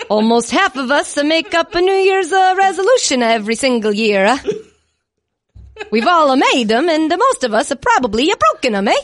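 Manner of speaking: put-on Italian accent. Reading an ad for home security on request: put-on Italian accent. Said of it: "in that accent".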